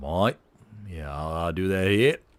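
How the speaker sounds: botched, really bad put-on Australian accent. Commentating a game, voicing a player's reply in a really bad Aussie accent. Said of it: "a Brazilian player with a really really bad Aussie accent".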